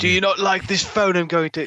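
put-on overdone British accent. Trying a Russell Crowe impression: too British Russell Crowe impression. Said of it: "that's too British".

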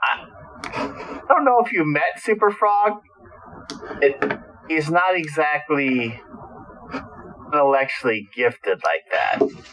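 scoffing, dismissive tone. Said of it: "Knockout kinda scoffs and says".

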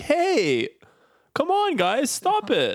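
put-on very high, very slow, gawky awkward teenager voice. Mimic a man doing his teenager voice, a very awkward teenager voice. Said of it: "doing his teenager voice, which is like just very awkward".

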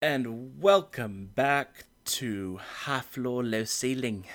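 slow speech with a faint South African accent. A podcast host welcomes listeners back after a break: slightly South African-sounding accent. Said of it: "I think it sounded almost a bit South African".

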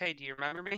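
ordinary talk

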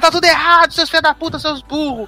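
mock, very high-pitched, angry tirade. Acting out a woman as she insults people, imitating someone cursing people out. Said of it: "ela xingando as pessoas".

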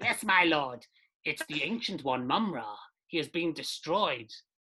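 voice of a lizard-like creature. Storyteller voicing a creature answering its lord, lizard-like creature voice. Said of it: "The lizard-like creature speaks".

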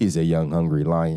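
very low, deep put-on voice, dropped way down. Quoting a line about being hungry, done in Floyd voice. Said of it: "in my Floyd voice".

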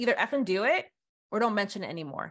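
ordinary talk, nothing marked

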